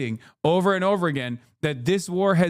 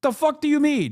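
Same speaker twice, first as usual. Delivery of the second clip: plain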